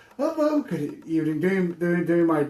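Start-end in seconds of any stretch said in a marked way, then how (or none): 0.2-1.4 friendly, polite, put-on customer-service voice. Retelling greeting customers at the door: imitating his own friendly delivery-guy greeting. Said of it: "trying to be my good pizza delivery guy".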